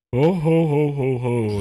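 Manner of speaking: very slow ho-ho laugh, each ho stretched out. Describing meeting Santa as a child, imitating him: Santa Claus voice. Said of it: "and he's like".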